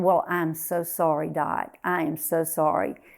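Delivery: mock sorrowful, sympathetic, sad tone. Retelling overhearing Mama on the phone, imitating her sad tone. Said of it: "she had a very sad tone to her voice".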